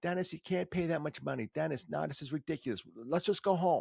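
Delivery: put-on New York accent. Retelling what mom said while looking for tickets: imitating mom's New York accent. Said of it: "has that New York accent".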